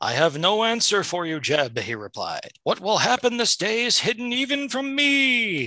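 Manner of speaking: high, sing-song ghostly voice, "me" drawn out. Reading a story aloud, voicing the general's ghost answering a question, in a ghost voice. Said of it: "That's my ghost voice".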